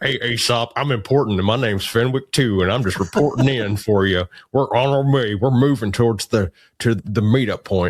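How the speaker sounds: cartoonish, pompous, self-important radio voice. Mocking a man who keeps reporting in over the radio, imitating a self-important voice. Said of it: "trying to be more self-important than he really is".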